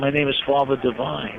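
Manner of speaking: plain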